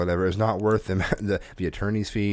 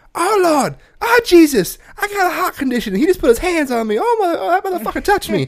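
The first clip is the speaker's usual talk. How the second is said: very high, shrill, loud, frantic Southern woman's voice; 8 dB louder than usual. Retelling a woman's outburst after a guard blocked her: imitating a southern woman freaking out. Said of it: "freaking out about it".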